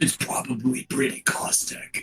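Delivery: whispered voice. Turning to everybody, saying the remark in a whisper rather than out loud. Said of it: "I'm going to whisper that".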